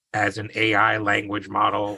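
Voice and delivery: put-on machine-like, computerised robot voice. Reading out an AI chatbot's answer: robotic ChatGPT voice. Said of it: "I'll try to do like a robot voice".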